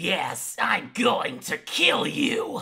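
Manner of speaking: strained, loud, high, weird would-be menacing growl. Describing how an anime protagonist talks when angry: imitating a weird growly voice. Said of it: "Like this really weird growly thing".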